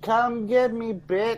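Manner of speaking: top-of-the-lungs scream, very high, shrill, drawn-out. Taunting a monster in character: screaming at the top of lungs. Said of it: "I scream at the top of my lungs".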